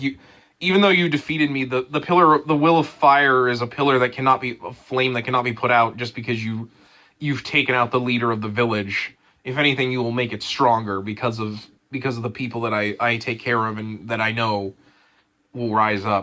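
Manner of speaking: usual speaking voice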